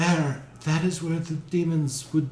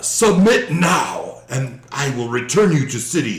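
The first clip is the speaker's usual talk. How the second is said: thundering, loud, booming, commanding delivery; 7 dB louder than usual. Voicing a rider descending from the sky on a flaming steed, in a booming voice. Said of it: "in a booming voice".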